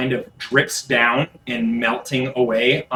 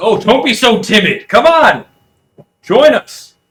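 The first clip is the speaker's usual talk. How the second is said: loud, high-pitched, carrying shout; 10 semitones higher, 11 dB louder than usual. Voicing the player's father calling to them: father shouting out. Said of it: "you hear your father shout out".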